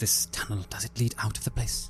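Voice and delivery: speaking low. A character asks a companion a question, in a low voice. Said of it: "And I say in a low voice to Hoss".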